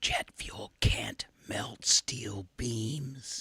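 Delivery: very soft, slow, drawn-out whisper. Showing listeners how to act like a conspiracy theorist: leaning into a stranger's ear. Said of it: "you just lean into someone's ear you don't know and say".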